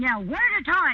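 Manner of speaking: put-on scolding voice. Retelling ordering men around at a bachelor party: chastising mommy tone. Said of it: "I just started going into mommy tone and ordering them around".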